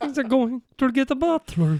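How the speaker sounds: put-on comic Dracula impression voice. Answering a request for an impression: Jason Segel's Dracula impression. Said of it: "impression of Jason Segel's Dracula".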